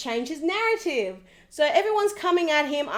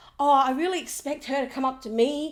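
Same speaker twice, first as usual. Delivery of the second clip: put-on, mocking voice. Retelling what Tim expected at the dinner party: imitating Tim. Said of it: "He's like".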